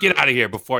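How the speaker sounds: put-on Chicago accent. Retelling a comedy sketch joke: imitating Bill Hader's Chicago accent. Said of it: "the Chicago accent just kills me".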